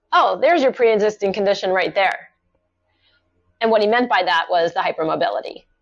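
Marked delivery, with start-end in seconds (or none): none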